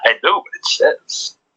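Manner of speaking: sinister voice, high and slow. Retelling the end of an episode, imitating Toby's sinister voice. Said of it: "It's more sinister".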